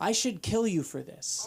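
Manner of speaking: dead-calm, even, extremely calm voice. Retelling what a guy said while looking the speaker in the eye, imitating the calmest voice ever. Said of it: "with the calmest voice ever".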